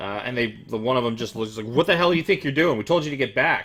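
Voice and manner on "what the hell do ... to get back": loud, high, furious in-character guard voice. Voicing a guard in a game, ordering the player back: angry guard voice. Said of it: "he seems really angry at you now".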